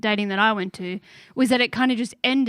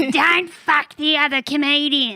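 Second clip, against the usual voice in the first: Melbourne stand-up comedian delivery, pitched up; 5 semitones higher, 3 dB louder than usual. The speaker repeats advice constantly given to them: Melbourne comedian voice. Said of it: "the Melbourne comedian voice".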